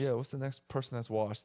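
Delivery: ordinary talk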